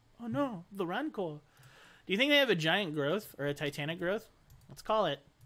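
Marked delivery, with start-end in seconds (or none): 0.2-1.4 pitched-up, high robot voice. A player repeats the joke during the game, in a C-3PO impression. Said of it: "my best C-3PO impression".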